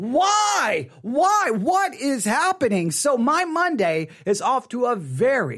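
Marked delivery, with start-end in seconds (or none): 0.0-2.9 put-on exasperated disbelief, frustrated, long stretched-out why. Retelling her sister's call about church, the speaker acts out her reaction: acting out own frustration. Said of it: "all I can do is go".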